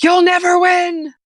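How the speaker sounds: very high, very loud, enraged, furious shriek. Retelling what the handcuffed father shouted from the car window: imitating someone screaming. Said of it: "he screamed".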